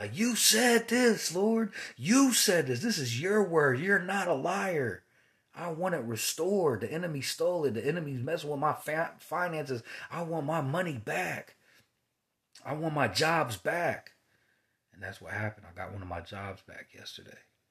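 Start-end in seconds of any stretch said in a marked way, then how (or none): 0.2-14.1 mock, loud, pitched-up hollering. Retelling a prayer from months ago: retelling yelling at God. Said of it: "I was yelling at him".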